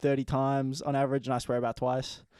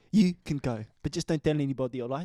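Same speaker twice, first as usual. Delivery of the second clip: put-on South African accent. Showing off the one south african accent he can do well, in that accent. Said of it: "The only South African I can do quite well".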